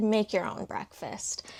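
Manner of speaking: ordinary talk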